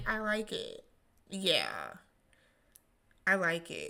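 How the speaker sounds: acted lukewarm, underwhelmed tone, low, quiet and unexcited. Retelling how Raven reacted to the dress, imitating Raven's flat monotone. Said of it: "she's rather monotone".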